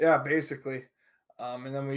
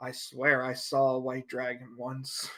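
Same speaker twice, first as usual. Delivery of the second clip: muttered, quieter and slower pace; 6 dB quieter than usual. Narrating a scene, voicing Storm as he mutters under his breath. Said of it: "mutter under his breath".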